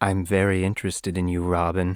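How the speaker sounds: deep, creepy villain voice. Retelling a cartoon plot to others, creepy Slade impression. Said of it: "It's so creepy".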